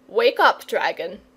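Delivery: sharp, clipped delivery. A man wakes a dragon, shaking it by the elbow: said sharply. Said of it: "he said sharply".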